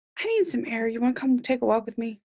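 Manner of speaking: whispering. Voicing a character who leans over to another character: whispering. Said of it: "kinda whisper to Bo".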